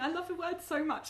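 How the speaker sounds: words broken up by laughter throughout. Mid-story about first year at uni, laughing while speaking. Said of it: "Sorry, I'm just laughing".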